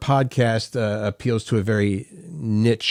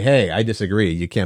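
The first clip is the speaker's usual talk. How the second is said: usual speaking voice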